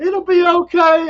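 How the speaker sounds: put-on forced hard voice. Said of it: "I'm talking with a hard voice because I'm scared too".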